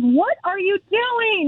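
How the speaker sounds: play-acted, high, long drawn-out called-out yell. Telling a story, the speaker acts out a man yelling at him on a bridge. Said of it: "he's yelling at me on the bridge".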